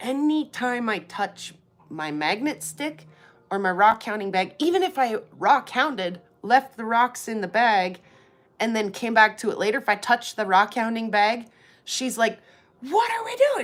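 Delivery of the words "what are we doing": put-on dog screaming sounds, higher. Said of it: "She just starts screaming".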